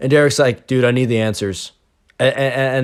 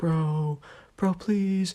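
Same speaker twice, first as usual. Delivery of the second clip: hushed little half-whisper, pitched slightly up; 6 semitones higher, 9 dB quieter than usual. Retelling Derek asking the subscriber during a test, in a little half-whisper. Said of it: "in a little whisper voice".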